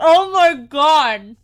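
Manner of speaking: slow, loud, tearful laugh-cry, about to cry.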